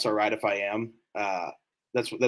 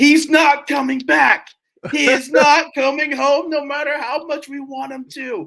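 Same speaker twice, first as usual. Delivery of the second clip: put-on scream, higher and louder; 8 dB louder than usual. Retelling a radio caller segment, imitating radio host screaming.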